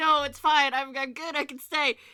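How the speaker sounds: squawky, insistent, protesting near-squawk. Voicing Leo protesting being sent home: squawking protest. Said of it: "an almost squawk of protest from Leo".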